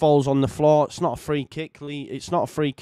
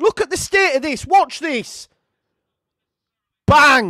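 really angry, fuming; 11 semitones higher, 6 dB louder than usual. Watching a replay of a foul that should have been a straight red: fuming. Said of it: "I'm fuming with that".

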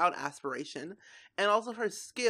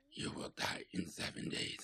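very hushed, evil, demonic horror-movie whisper; 12 dB quieter than usual. Reminded of an evil movie by a seven-day countdown, demonic voice. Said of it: "that demonic type of voice".

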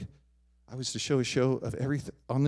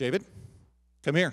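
put-on snippy, curt tone. Retelling a professor's mother calling him over: imitating a mother with a snippy tone. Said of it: "that tone seemed a little snippy".

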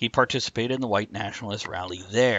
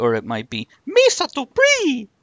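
goofy creature voice, much higher, louder; 7 dB louder than usual. Reading out a name from an article, the host tries another pronunciation: Jar Jar Binks voice. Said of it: "you just sounded just like Jar Jar Binks".

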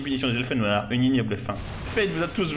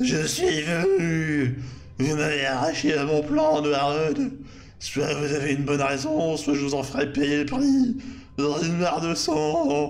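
put-on voice cracking and breaking like a teen's. The underage lord of the lower abysses, just summoned, speaks: breaking adolescent voice. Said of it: "vous lui donner une voix qui mue".

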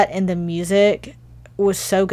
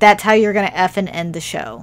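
ordinary delivery

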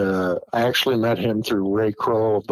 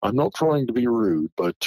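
put-on refined British accent; 3 semitones higher than usual. Retelling what Peter Byrne said about the sighting, imitating Peter Byrne's British accent. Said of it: "he had a British accent".

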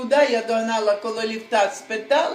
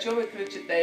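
ordinary talk

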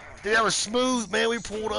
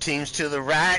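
ordinary talk, nothing marked

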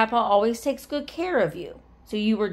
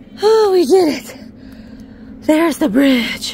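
very loud, breathless, pitched-up exclamation; 7 semitones higher, 11 dB louder than usual. Having squeezed through up to a view of the bridge, speaking out of breath. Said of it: "Pardon me, I am out of breath".

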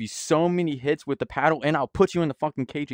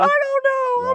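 loud, very high-pitched, put-on blubbering sobs; 5 dB louder than usual. Asked why they're crying after he left, fake crying. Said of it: "Why are you crying?".

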